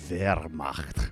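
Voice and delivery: sinister, very low, full ch and rolled r in Wehrmacht. Coaching pronunciation of a German word, evil-style 'Wehrmacht', rolled R. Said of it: "You got to sound all evil style, man".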